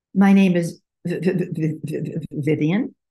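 audible, open stutter. A speaker demonstrates one way of saying their name: open stuttering. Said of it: "My intent was to get on the sound and stutter".

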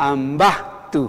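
ambatu with stress on second-to-last syllable, ba. Quechua lesson on second-to-last syllable stress: stress on ba in ambatu. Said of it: "La fuerza de voz en el quechua siempre está en la penúltima sílaba".

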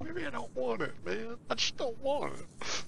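cartoonish voice, high and rasping. While joining a game, telling a friend he may not want it: Goofy-like accent. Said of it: "that accent almost sounded like Goofy".

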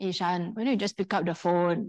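low, dry, flat deadpan with no emotion. Retelling what he said to her as the phone kept ringing: imitating a deadpan voice. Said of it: "he said to me in a very deadpan voice".

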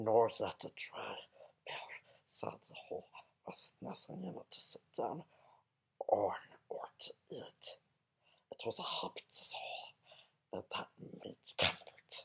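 every word hissed in a whispered creature voice. Reading the first chapter of The Hobbit aloud for fun, Gollum voice. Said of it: "doing it in Gollum's voice".

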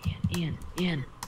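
soft unvoiced whisper. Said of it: "'Cause you are".

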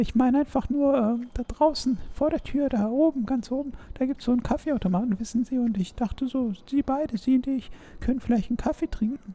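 very high, coy, flirty sweet talk. In a roleplay, inviting someone who must work to coffee, as flirty gold-digger Vanessa. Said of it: "Vanessa [name] ist richtige Golddiggerin".

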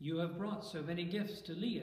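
ordinary delivery, nothing marked

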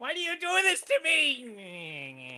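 very slow, high, swooping kobold voice, "me" stretched. In a roleplaying game, the kobold reacts to having its head patted; kobold character voice. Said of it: "[name] is the Kobold".

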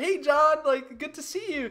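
overly friendly fake-nice tone. Acting out a bullied kid greeting the bully while smiling: imitating someone greeting nicely. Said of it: "he'll smile".

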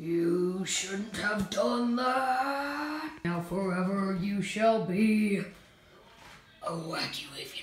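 scary, spooky pumpkin monster voice. A voice reacts to someone putting on a mask: scary pumpkin voice. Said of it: "sounds like me trying to do a voice of a scary pumpkin".

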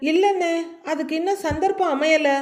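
ordinary delivery

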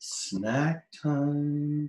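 half-whispered, final word stretched long. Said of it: "I'm gonna whisper".

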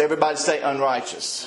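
ordinary delivery

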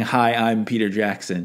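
normal talking voice

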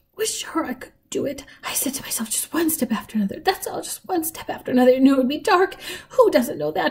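fast, feeble, weak, trembly voice, barely pausing. A man near the greenhouse talks as Lena comes closer, in a fast, weak, trembly voice. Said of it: "He spoke in a fast, weak, trembly voice".

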